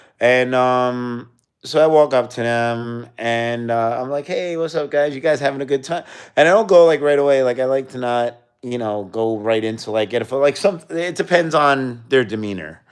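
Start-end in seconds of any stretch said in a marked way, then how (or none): 4.3-6.0 cheery, sociable, friendly, pitched-up voice. Showing how they greet people before asking for a photo, raised friendly voice. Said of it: "raise up the octave of my voice".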